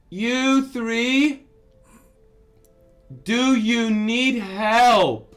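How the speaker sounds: very loud, high, booming, slow, drawn-out call. Voicing someone down the beach calling to the party: calling out from down the beach. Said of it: "You hear this voice call out".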